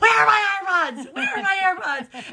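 mock high, loud, frantic screaming like a lunatic. A mother telling a story about her kids, retelling screaming like a lunatic. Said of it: "I'm screaming like a lunatic".

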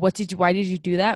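ordinary delivery

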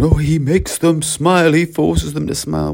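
slow, high, silly mocking voice. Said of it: "silly person going".

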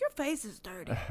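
acted, very caring, deeply worried tone. Retelling a story, the speaker quotes a woman, imitating a caring voice. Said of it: "said like with the most caring voice".

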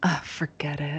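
put-on irritated muttering. Retelling how she muttered under her breath, imitating irritated muttering. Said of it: "Joy was getting so, like, irritated".

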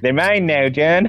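put-on Wisconsin-accented speech. Retelling a scene where the Frogman threatens John: Wisconsin accent. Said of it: "why is he Wisconsin now?".

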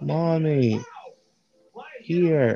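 small character shouting. Voicing Percy the Manatee poking his head up: yelling in character. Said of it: "he kinda pokes his head on there and just yells".

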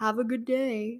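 dreary, joyless, mundane, depressing tone. Retelling what a cashier said to a customer, mimicking a mundane, depressing tone. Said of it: "says in like this most mundane, just depressing tone".

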